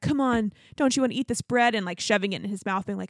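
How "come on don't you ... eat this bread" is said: mock teasing, taunting tone. Retelling a dinner scene, bread waved in her face: imitating Shane taunting. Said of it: "wafting it in her face".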